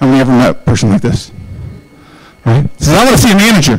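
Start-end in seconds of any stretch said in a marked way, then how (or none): 2.9-3.8 irate, angry, demanding tone. Telling a story about a customer who came in to a receptionist: imitating an angry customer. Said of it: "He's a very angry man".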